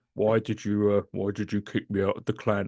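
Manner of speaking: talking through a voice-changer mask. Retelling an annoyed player kicked from the clan: imitating a Dark Master voice mask. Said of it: "using what was called the Dark Master, like, voice mask".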